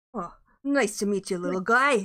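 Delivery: put-on New York accent. A character greeting a rescued little apprentice archer, New York accent. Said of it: "I got to get my New York accent on you".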